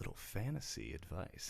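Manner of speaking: hushed, breathy, put-on seductive whisper. Repeating a phrase after another speaker asks for it: put-on sexy voice. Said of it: "Say it in your sexy voice".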